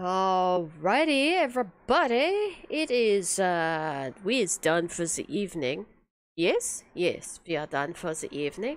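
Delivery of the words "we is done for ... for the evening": put-on German accent appearing suddenly. Wrapping up the evening's stream and saying goodbye: german accent. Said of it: "I'm all of a sudden German".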